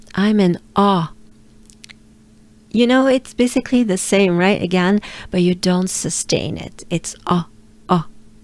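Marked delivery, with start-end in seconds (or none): 7.3-8.1 dry, short, closed French "ah". Showing a learner the vowel without sustaining it: dry, closed French ah. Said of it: "It's pretty dry and closed up".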